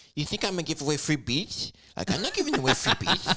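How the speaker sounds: nerdy talk with the voice up high. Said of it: "He talked like a fucking nerd".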